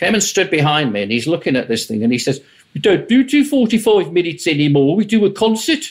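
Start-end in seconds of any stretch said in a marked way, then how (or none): 2.7-5.9 put-on Birmingham accent, pitched up. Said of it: "I'm going to attempt a Birmingham accent now".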